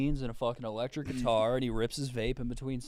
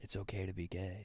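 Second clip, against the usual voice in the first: hushed, very soft, close half-whisper; 6 semitones lower, 12 dB quieter than usual. Acting out a youth pastor talking to someone: imitating a youth pastor half-whispering. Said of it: "whispers in your ear".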